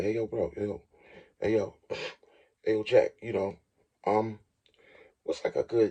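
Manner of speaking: hushed voice. Retelling how a coworker asked about a firearm: imitating someone getting quiet. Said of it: "got a little quiet".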